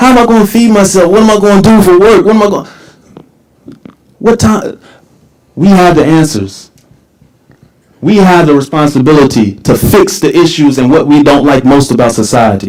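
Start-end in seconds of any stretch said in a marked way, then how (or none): 0.0-2.7 put-on high, tearful, crying little girl's voice. Retelling a young girl's words from the news: imitating a crying girl. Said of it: "A twelve-year-old little girl".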